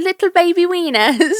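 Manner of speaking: high, put-on British accent. Imitating a woman's tic phrase: imitating a british accent. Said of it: "Always in a British, a British accent".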